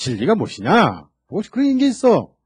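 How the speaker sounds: sarcastic scoffing, pitch jumping high at the end.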